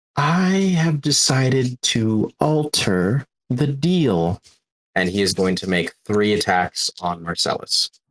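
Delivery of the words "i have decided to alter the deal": smile audible in every word, pitched up. Game master voicing Damien in the players' heads, with a smile in his voice. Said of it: "with a smile in his voice".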